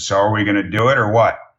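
deep croaky Texas twang. Telling how their parents decided to marry, quoting their mom, imitating mom's deep froggy twang. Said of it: "had a bit of a twang and a very deep froggy voice".

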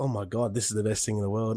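ordinary talk

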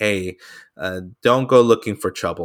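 usual speaking voice

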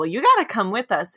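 ordinary talk, nothing marked

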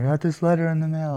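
high, frantic, tearful voice while crying. Retelling his wife's phone call about a letter: imitating frantic crying. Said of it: "she called me frantically crying".

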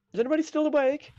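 calling out loudly. A player's character yelling out from inside a barrel to anyone outside. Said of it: "You're just yelling this out".

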